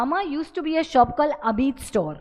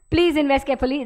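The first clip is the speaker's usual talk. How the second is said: mock rushed, very fast reading delivery. Imitating how investment ads read their risk warning: imitating a rushed fast disclaimer. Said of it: "they say it very fast".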